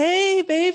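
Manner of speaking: very high, jumped up an octave. Greeting a girlfriend who calls, voice up an octave. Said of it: "It goes up an octave".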